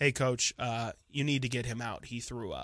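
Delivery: put-on low, flat, dead straight-faced monotone, never rising. Retelling how Colby talks to the coach, imitating Colby's deadpan monotone. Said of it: "just complete straight faced, never elevating above a three".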